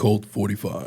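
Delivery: commercial announcer voiceover voice. Saying a short product name on request: commercial voiceover voice. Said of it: "one of those kind of voices that you hear in a commercial or a voiceover".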